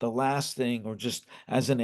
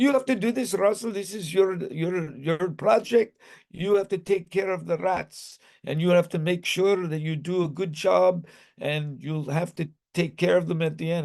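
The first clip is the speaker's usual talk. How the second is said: put-on thick Indian accent laid on heavy, pitched up; 5 semitones higher than usual. Quoting what the speaker's teacher said about the school study, in a thick indian accent. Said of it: "She had a very thick uh, Indian accent".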